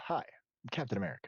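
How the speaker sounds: breathy, half-whispered put-on voice. Imitating how another speaker sounds: Captain America impression. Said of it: "why do you sound like Captain America?".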